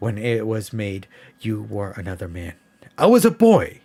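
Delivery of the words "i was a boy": impatient, very high, shrill and loud. A man replies to a woman who says he has changed, impatiently. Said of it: "he said impatiently".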